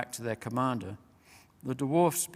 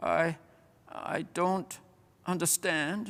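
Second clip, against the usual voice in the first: dazed, bewildered throaty mumble, higher pitch; 5 semitones higher than usual. Narrating a dying bear's last words, in a throaty mumble. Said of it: "it mumbled in its throaty voice".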